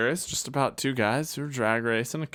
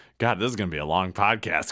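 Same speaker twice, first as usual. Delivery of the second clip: ordinary talk, nothing marked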